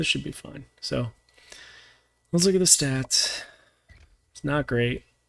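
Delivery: quiet, kept-down voice. Speaker keeps voice down in case someone comes back in: voice kept down. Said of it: "I'm going to keep my voice down a little bit".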